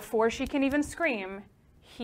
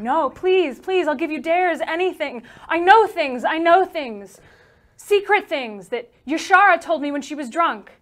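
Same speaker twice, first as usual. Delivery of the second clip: frantic, high, loud, desperate begging scream; 6 semitones higher, 7 dB louder than usual. A woman throws her hands at an approaching man, begging him: screaming.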